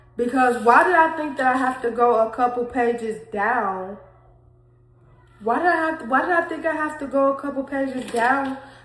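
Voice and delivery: voice on the verge of tears. Speaker reading an old entry they wrote aloud to viewers, about to cry. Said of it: "I am about to cry".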